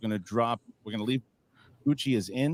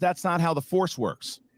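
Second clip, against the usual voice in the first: ordinary talk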